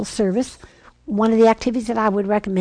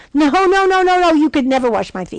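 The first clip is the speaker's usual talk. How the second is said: play-acted, high, loud, impulsive objection; 6 semitones higher, 6 dB louder than usual. Retelling the foot washing, Peter refuses Jesus: impetuous Peter protesting. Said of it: "what impetuous Peter said".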